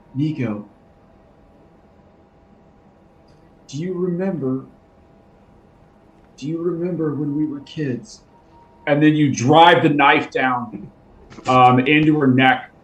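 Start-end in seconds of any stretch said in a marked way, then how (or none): 0.1-8.2 soft, hushed, half-whispered words held close. Narrating a scene, a woman cradled in your arms half-whispers to you: half-whispered. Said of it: "she whispers to you".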